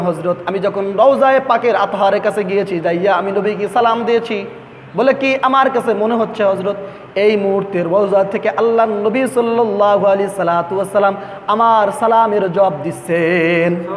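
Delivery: ordinary talk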